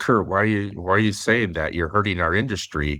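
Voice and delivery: ordinary delivery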